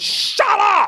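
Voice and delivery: shrill, very high screamed outburst. Retelling an actor screaming at a clapping audience: imitating Michael Sheen screaming. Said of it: "just stood up and just went".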